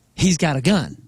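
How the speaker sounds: normal talking voice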